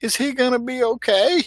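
put-on tiny, very high child voice. Recounting a child behind her mother during the movie asking a question, in a tiny voice. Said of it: "tiny, tiny voice behind her that goes".

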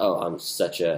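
ordinary delivery

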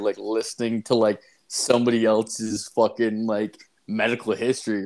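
ordinary talk

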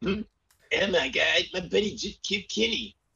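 very high-pitched, goofy, silly put-on voice. Taking a turn in a running joke, in a put-on carpet voice. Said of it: "Gotta do the carpet voice".

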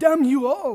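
put-on loud, high cartoon baby voice. Friends discussing a cartoon episode, one tries a Stewie impression. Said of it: "I could probably do a regular Stewie".

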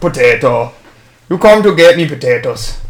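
put-on Irish accent, low pitched. Challenged to say an Irish word, in an Irish accent. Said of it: "say an Irish word with an Irish accent".

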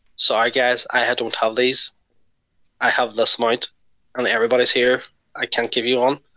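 plain

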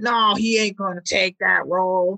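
put-on broad Boston accent, laid on thick, drawn out. Imitating someone at the bar arguing about a draft pick: thick Boston accent. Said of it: "thick Boston accent you laid on there".

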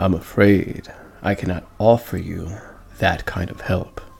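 creepy, unsettling, eerie voice. Asked for training to beat Mega Midas, refusing in a creepy voice. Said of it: "Why do you sound kind of creepy when you speak?".

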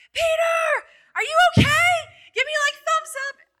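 mock very high, shrill, loud calling-out scream. Recalling calling to a swimmer far out past big waves, retelling a scream. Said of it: "I'm screaming to him like".

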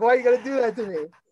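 play-acted, loud, high yelling. Retelling yelling at him after the meet for causing tears, acting out the yell. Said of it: "I'm like yelling at him".

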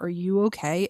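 ordinary talk

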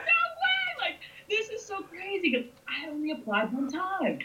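play-acted ecstatic shriek, very high, way stretched. Recounting their reaction after getting over and turning flashers on, retelling own screaming. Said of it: "I'm like screaming".

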